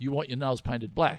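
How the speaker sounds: ordinary delivery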